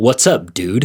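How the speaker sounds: put-on American accent. Retelling how Henry greeted them every day: Henry's American accent. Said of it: "fucking fire, uh, American accent because he's British".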